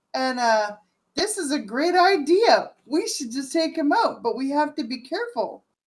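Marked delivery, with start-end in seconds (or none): 1.1-5.5 oddly cheerful, upbeat, bright sing-song happy tone. A player speaks to the party in character; unusually happy tone. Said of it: "I put it in an unusually happy tone".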